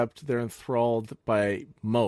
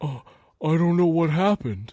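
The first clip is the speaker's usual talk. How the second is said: high, put-on sad crying character voice; 6 semitones higher, 4 dB louder than usual. Voicing a speaker's sad voice after crying is heard: Mose impression. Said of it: "That was my best Mose impression".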